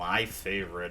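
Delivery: low, dry sarcastic tone. Reacting to the treasure just pulled from a chest, sarcastic. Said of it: "I said sarcastically".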